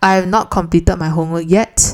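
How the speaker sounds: ordinary delivery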